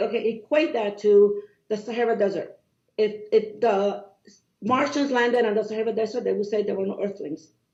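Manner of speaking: ordinary delivery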